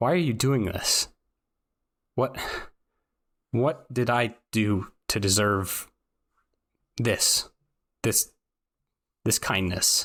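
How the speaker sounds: timid, small, scared voice, halting and breaking up. Recounting what a woman in the story said, imitating a scared little voice. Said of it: "in like this almost a scared little voice".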